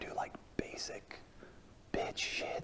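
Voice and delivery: very quiet, hushed, breathy whisper. Worried the company nearby might overhear, a speaker keeps talking, whispering. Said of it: "I'm whispering now".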